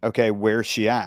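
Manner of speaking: ordinary talk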